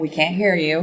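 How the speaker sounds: ordinary talk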